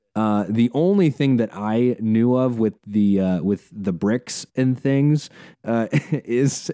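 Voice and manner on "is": breaking into laughter mid-sentence. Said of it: "I'm, I'm laughing".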